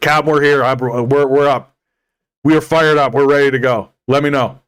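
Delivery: put-on reckless, gung-ho Texan voice. Acting out an imagined security guy as a reckless texan. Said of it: "just the most reckless Texan".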